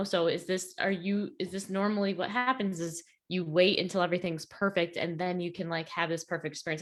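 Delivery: normal talking voice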